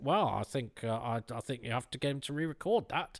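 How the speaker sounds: caricatured, exaggerated nasal voice. Imitating a Doctor Who fan objecting: imitating a nasal Doctor Who fan. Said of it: "give a Doctor Who fan a nasal voice like this".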